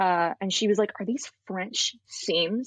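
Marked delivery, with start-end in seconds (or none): 1.0-2.7 mock dead-serious, very grave tone. Retelling a woman asking about the seams, in a very serious tone. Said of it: "In like a very serious tone".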